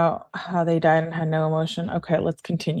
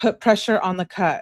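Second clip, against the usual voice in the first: usual speaking voice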